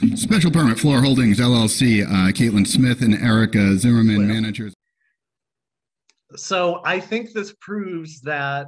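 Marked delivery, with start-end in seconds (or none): 0.2-4.7 very loud, booming, formal official announcer voice. The clerk reads out the public hearing item, in an official voice. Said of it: "[OFFICIAL VOICE]".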